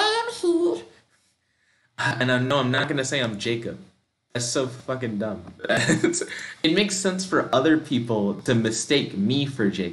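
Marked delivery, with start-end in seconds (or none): 0.0-0.8 squeaky little voice, way up high. Narrator reads a man answering at the mansion door, in a squeaky voice. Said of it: "he says in a squeaky voice".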